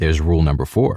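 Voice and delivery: ordinary delivery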